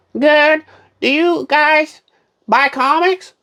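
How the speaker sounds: high, put-on old lady voice. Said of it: "I'm gonna do my old lady voice".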